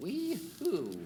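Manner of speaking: put-on very high-pitched little old lady voice. Voicing an old woman who halts an approaching player: voicing an old woman. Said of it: "squints with her old lady eyes".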